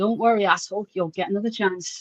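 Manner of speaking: put-on muttering under the breath. Retelling what a man says as the cop cars arrive, retelling a mutter under breath. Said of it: "he just says under his breath".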